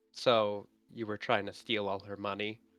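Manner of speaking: hushed, soft half-whisper. Playing a character who leans into Saren's ear: half-whispering. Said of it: "I'm gonna whisper in Saren's ear".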